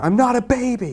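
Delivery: screaming. Acting out a woman in the town square: screaming. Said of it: "she's screaming".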